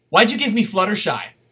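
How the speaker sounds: dead-serious tone. Retelling what an eight-year-old asked about her tattoo, retelling a dead-serious question. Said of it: "in the most serious tone you can imagine".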